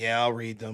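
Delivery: very low, lifeless drone with no inflection. Criticizing a flat delivery, mimicking a student asked to read aloud: imitating a flat, no-energy student. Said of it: "no energy, no change in inflection".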